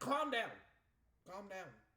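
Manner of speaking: put-on, self-calming, steadying voice. After a level that would not end, speaking to himself and the game: telling himself to calm down. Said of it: "I'm also telling myself to calm down".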